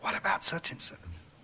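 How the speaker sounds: soft, hushed whisper. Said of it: "he'll whisper in your ear".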